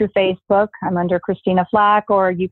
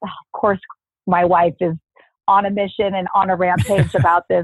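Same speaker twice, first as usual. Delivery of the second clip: ordinary talk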